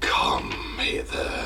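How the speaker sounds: slow hushed whisper. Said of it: "you hear a voice go".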